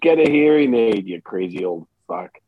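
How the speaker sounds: quietly muttered under the breath. Voicing a character heading up the stairs: muttered under breath. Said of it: "under my breath".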